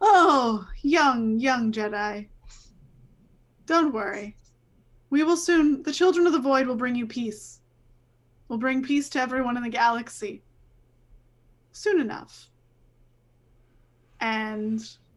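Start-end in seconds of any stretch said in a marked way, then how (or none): 0.0-12.5 speaking while chuckling and laughing. Voicing a laughing villain who taunts a player character: laughing while talking. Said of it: "he starts laughing".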